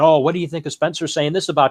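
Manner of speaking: usual speaking voice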